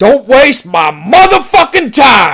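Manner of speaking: explosive sudden loud shout, high and swooping, done badly. Showing how a film actor suddenly shouts: bad Al Pacino shouting impression. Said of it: "I can't do a good Al Pacino impersonation".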